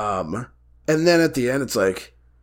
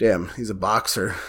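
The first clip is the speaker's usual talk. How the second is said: ordinary talk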